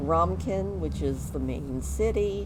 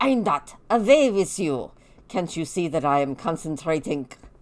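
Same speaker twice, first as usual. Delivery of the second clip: put-on strong, heavy German accent throughout, raised voice; 6 dB louder than usual. Describing a game character and voicing his lines, in a very German accent. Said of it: "speaking in a very German accent".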